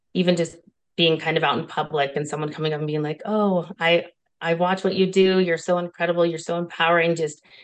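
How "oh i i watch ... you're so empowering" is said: ordinary talk, nothing marked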